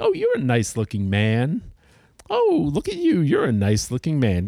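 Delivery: vile, vicious, creepy leering voice. Retelling how a stranger greeted people: imitating a creepy leering man. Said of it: "creepy, sort of vile, vicious, but sort of leering vibe".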